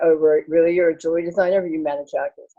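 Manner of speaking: usual speaking voice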